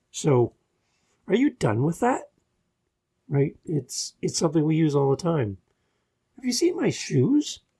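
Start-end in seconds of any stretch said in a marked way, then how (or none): 6.3-7.5 question-like rising tune on shoes. Showing how the voice goes up in a question: rising pitch on shoes. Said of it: "We go up".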